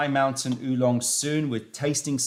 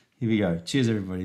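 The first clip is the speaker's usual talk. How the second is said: plain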